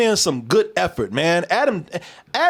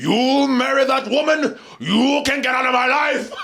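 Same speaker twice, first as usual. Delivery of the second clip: put-on theatrical British accent, higher pitch; 6 semitones higher than usual. Imitating an actor's British accent in a movie: Jeremy Irons imitation, Shakespearean British. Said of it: "He came here doing Shakespeare".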